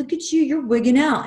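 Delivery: mock loud, aggressive, in-your-face heckling taunt. Recounting a homeless man harassing the speaker, imitating aggressive taunting. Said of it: "he starts fucking with me very aggressively".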